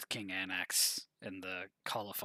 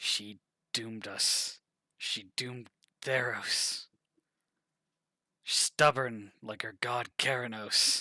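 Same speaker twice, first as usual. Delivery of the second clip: loud shivering voice, teeth chattering through the words; 3 semitones higher, 7 dB louder than usual. Voicing a character asked why the kingdom suffers, shivering, teeth-chattering voice. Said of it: "kind of like teeth chattering, shivering".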